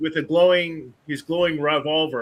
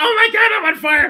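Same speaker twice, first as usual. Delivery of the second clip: frantic, very high, loud panicked screaming; 12 semitones higher, 5 dB louder than usual. Player acting out the old man on fire running around: screaming in panic. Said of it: "running around screaming like".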